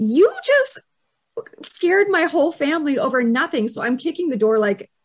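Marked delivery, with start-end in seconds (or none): 0.0-3.7 high, livid, angry tirade. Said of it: "I'm like".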